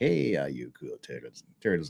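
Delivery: very low, soft backwoods country twang. Reading a super chat greeting aloud in Tug's voice with a country accent. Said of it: "making him sort of sound like he's uh, from Joe Country".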